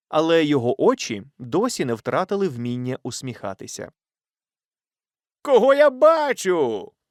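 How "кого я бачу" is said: delighted, joyful exclamation, pitched very high. In a story, a cousin greets the narrator, helping them off a horse: joyful exclamation. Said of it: "радісно вигукнув кузен".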